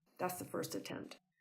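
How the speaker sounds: plain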